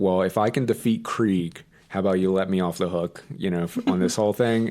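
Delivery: ordinary delivery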